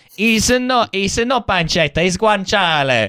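high, slow mock Italian police officer voice.

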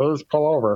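high, very robotic, cheesy movie robot voice. Imagining bad voice acting for RoboCop, robotic RoboCop voice. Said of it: "Like, very robotic".

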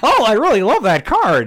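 very high, loud, swooping put-on nerd voice. Mimicking the other speaker opening a box of cards: Conan O'Brien nerd voice. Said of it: "Conan O'Brien nerd voice".

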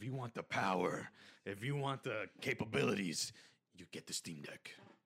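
put-on, fake deep voice. Pitching the Steam Deck to another speaker: put-on deep voice. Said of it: "Sorry for that deep voice".

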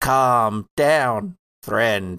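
strange, warped, distorted, almost robotic voice. A masked figure answers someone trying to calm it, distorted, almost robotic voice. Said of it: "Distorted, strange, almost robotic".

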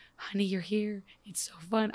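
put-on soft odd delivery. Retelling how a character delivered a line: imitating a very soft, odd delivery. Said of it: "it was very soft and odd".

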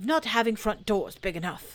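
cross, huffy, thoroughly put-out voice. Stuck in a doorway, answering the rabbit's remark, cross. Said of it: "said Pooh crossly".

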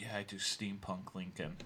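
under-the-breath, hushed. Retelling what one of the Linkers said to the speaker and a friend, under his breath. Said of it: "kind of like underneath his breath".

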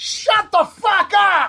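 loud, slow, high yelling. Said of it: "He yells".

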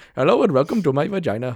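put-on speaking in an Indian accent. Imagining a girlfriend asked to do an accent, in a put-on Indian accent. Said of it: "do an Indian accent".

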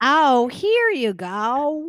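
put-on elderly woman voice. Joking that everyone from Montana sounds alike, imitating an old woman's voice. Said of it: "sounded like a 68-year-old woman".

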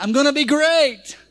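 eager, full-hearted, enthusiastic delivery with real gusto. A speaker leading listeners in repeating a phrase, with a little gusto. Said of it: "Put a little gusto in it".

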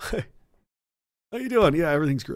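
soft, fake-friendly politician voice. Showing the audience what a politician's face looks like: politician fake-smile impression. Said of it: "I'll do it for you right now".

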